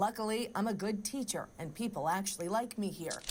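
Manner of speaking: ordinary talk, nothing marked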